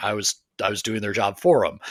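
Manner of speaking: ordinary talk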